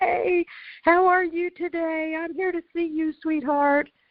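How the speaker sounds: bright, happy, perky, very high voice. Retelling how a helper greeted someone at the door: imitating a perky, happy voice. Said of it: "just all perky and happy".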